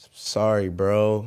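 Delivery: put-on sad tone. Retelling what a guy on a screen said to him, imitating a sad voice. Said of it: "it's a sad voice".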